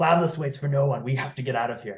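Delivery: full half-whisper with no voice at all. Leaning over to another character in the game: half-whispering in character. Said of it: "I lean over and whisper to Sven".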